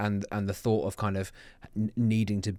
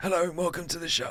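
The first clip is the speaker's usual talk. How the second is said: hoarse voice giving out, barely holding, pitched up; 9 semitones higher than usual. Retelling hosting a podcast the morning after a night out: imitating a voice that's going. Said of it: "I genuinely sounded like this as I was saying".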